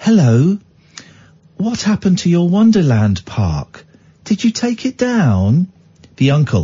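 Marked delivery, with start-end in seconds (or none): 0.0-5.7 put-on English accent, higher. Doing an impression of the aunt for the other to guess: Ruth Langsford impression. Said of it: "this is the accent".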